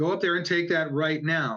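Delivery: firm, stern, serious, no-nonsense delivery. Retelling a voice heard in church at communion: imitating a voice getting serious. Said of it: "the tone of the voice ... when my dad was getting serious with me".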